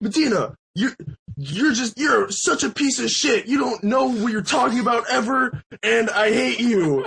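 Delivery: play-acted, high-pitched, drunken tirade. Retelling how a drunk man insulted a stranger: imitating drunk Ben ranting. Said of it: "going off".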